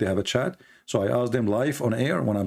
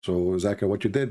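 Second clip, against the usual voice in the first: ordinary talk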